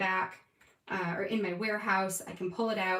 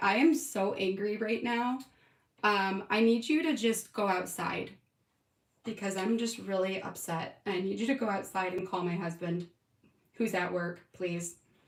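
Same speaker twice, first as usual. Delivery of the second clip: usual speaking voice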